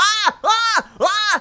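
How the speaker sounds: very high-pitched, very loud, shrill goblin-like shrieks. Voicing a goblin Muppet being pulled, screaming in someone's face: screaming goblin Muppet. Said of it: "in your face screaming".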